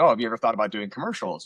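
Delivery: plain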